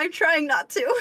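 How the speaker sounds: high, tearful voice fighting back tears. Asked whether they're actually crying, answering while holding back tears. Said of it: "are you actually crying?".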